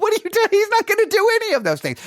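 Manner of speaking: play-acted, very high, spoken through laughter. Retelling reading a scripture passage aloud and reacting: imitating laughing while reading.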